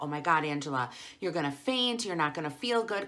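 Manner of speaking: ordinary talk, nothing marked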